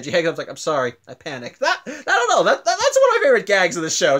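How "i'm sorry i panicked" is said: put-on deadpan cartoon voice. Retelling a cartoon gag where a character hangs up the phone, imitating Garnet's deadpan. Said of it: "Just the deadpan reaction throughout the whole thing".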